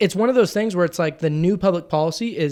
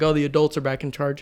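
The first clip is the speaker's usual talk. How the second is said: ordinary delivery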